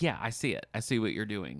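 ordinary delivery

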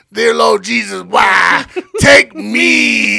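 tearful, sob-filled crying voice. Retelling a night at 3 in the morning, the speaker quotes a man; imitating a sobbing man. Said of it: "He's sobbing, crying so much".

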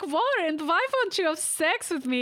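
put-on thick German accent. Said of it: "really thick, I don't know, German accent".

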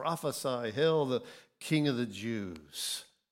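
usual speaking voice

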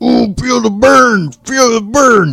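loud, drawn-out straining voice. On a podcast, showing listeners the faces being made: workout face voice. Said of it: "I'm gonna make some voices here".

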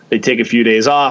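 ordinary talk, nothing marked

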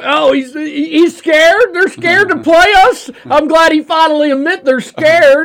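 put-on Arkansas accent. Mocking Arkansas fans upset over a coach's remark, mocking Arkansas accent. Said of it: "That's a good Arkansas accent".

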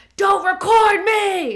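loud, high, shrill, angry screaming. Retelling how a partner reacts when anxious: imitating someone screaming. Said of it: "he just starts screaming, like".

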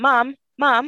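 mock, high-pitched screaming like a child.

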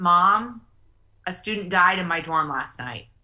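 cracking, breaking voice on the words. A mother retelling her son's call one night, imitating his breaking voice. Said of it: "His voice was breaking".

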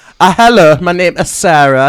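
loud mock Norwegian accent. Jokingly redoing the guest's introduction, loud fake norwegian accent. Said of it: "I was hoping for a Norwegian accent".

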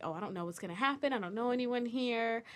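ordinary talk

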